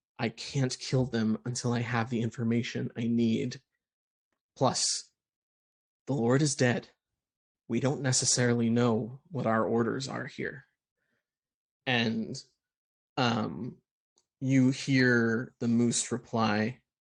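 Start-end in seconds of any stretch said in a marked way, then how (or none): 0.2-10.7 low, private, muttered under the breath. A narrator voices the captain speaking aside to the moose, under her breath. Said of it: "you hear her saying under her breath".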